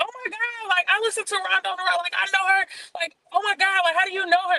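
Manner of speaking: very high, starstruck, excited gushing. Retelling how a stranger gushed to a cousin: imitating an excited fan. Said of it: "really excited".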